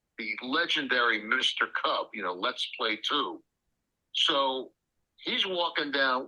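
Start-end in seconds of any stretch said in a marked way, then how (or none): none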